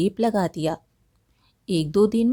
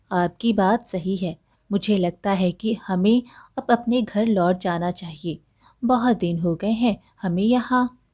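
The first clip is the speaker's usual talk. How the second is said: ordinary delivery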